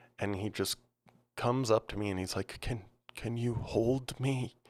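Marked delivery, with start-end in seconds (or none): 2.6-4.5 weepy, slow, tearful wailing voice. Retelling being woken by a man who comes over, imitating him wailing and crying. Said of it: "wailing, crying".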